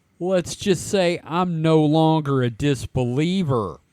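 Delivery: ordinary delivery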